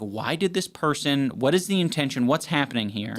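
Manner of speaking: usual speaking voice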